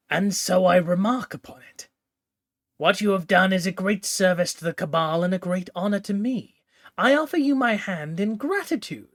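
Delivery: conspiratorial, theatrical stage whisper. Reading a story where a leader speaks into a kneeling listener's ear: conspiratorial stage whisper. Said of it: "in a conspiratorial stage whisper".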